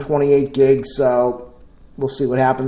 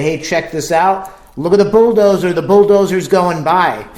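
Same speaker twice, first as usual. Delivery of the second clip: loud, raised voice calling out over open-air noise; 4 semitones higher, 4 dB louder than usual. Speaker demonstrating how they'd talk outdoors, talking really loud. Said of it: "I'm talking really loud".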